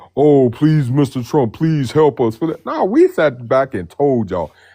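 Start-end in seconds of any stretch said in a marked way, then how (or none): 0.2-2.4 mock pleading, begging, higher. Retelling how someone begged for help: imitating someone begging. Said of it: "he begging".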